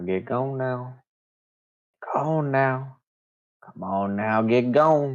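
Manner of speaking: coaxing, shooing, urging voice. Game master voicing an unseen voice in the mist urging the party away, quiet voice. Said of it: "you hear a quiet voice go".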